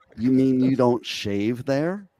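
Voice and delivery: deadpan, straight-faced delivery. Retelling one's own answer to a son's question: retelling a deadpan reply. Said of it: "with very straight face".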